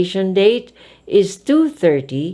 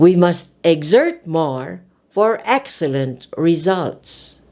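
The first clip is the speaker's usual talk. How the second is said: strong stress on the words exert and excellent. Lesson on emphasizing verb and adjective; stress on exert and excellent. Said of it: "we emphasize verb and adjective".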